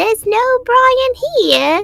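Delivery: very high swamp witch voice. The speaker recalls a line they said in a witch voice. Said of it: "this voice I did for a witch".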